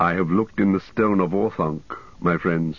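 plain

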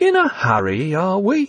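overly soothing, exaggeratedly calming, sing-song tone. Narrator reading a man's line to Evie after she stammers an apology, exaggeratedly calming voice. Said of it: "in an exaggeratedly calming voice".

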